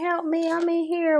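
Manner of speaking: play-acted high-pitched woman's scream. Retelling a tv episode where a trapped girl calls out: imitating someone screaming for help. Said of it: "she was screaming".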